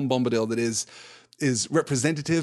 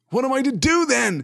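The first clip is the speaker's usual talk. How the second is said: very high, drawn-out cry of despair; 11 semitones higher, 5 dB louder than usual. A man alone asking himself aloud, crying out. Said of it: "He cried again".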